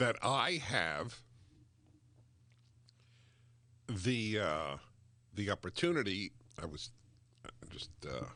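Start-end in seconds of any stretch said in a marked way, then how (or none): 0.0-6.3 choked-up voice with an emotional catch. Speaking of daily gratitude for the work, sounding choked up. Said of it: "It sounds like I'm choking up emotionally".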